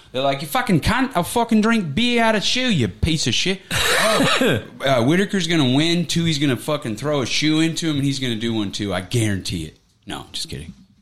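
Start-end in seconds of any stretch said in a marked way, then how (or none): 0.4-3.6 put-on Australian accent, pitched very high. Picking fighters, imitating two favorites who have Australian accents: Australian accent. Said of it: "cool like Australian Aussie accents".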